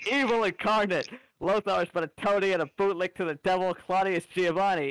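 seething, enraged, furious shout. A man who has had enough stands up on his bench: shouting. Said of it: "He just stands up on his bench and just shouts".

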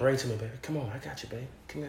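overly sweet tone. Performing bedroom shit talk when asked, too sweet shit talk. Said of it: "that's too fucking sweet".

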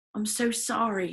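bashful, shy, timid little voice. Narrator reading a gothic boy's apology in the story, shy voice. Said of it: "he said in a shy voice".

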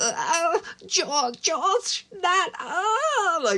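put-on anguished, very high, slow-stretched "oh". Critiquing an actress's performance in Test of Nerve: mock-anguished Elizabeth Sladen impression. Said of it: "like she's doing this sort of anguish".

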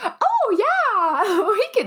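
very high, slow, drawn-out Midwestern gate agent voice. Telling a story about rebooking a flight to Boston, the speaker does a gate agent impression. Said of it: "This is my impression of every like gate agent ever".

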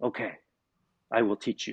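secretive, voiced stage half-whisper. Retelling a teacher leaning in to say he will teach: imitating a half-whisper. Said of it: "he kinda leans in and he whispers".

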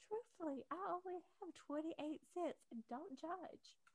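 earnest, sincere voice.

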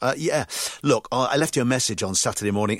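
ordinary talk

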